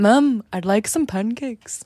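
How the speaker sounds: slow speech with Liverpool accent and vowels. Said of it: "the only phrase I can say in Beatles accent".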